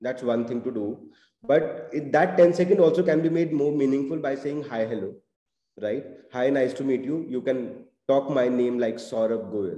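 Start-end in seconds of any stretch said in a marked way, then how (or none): 8.9-9.8 very slow, lower and quieter. Showing how to introduce yourself with your name, very slow name delivery. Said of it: "in a very slow tone".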